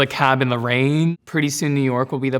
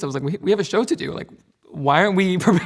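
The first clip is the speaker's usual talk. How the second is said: talking while laughing, pitched up; 6 semitones higher than usual. Recalling their first ballet show with everyone joking, laughing while speaking.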